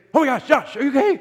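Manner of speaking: very high, put-on panicked voice, cracking. Retelling the man from the house checking on josh, imitating a panicked cracking voice. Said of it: "Like his voice cracked".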